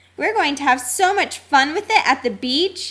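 plain

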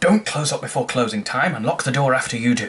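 put-on stern, strict old man voice.

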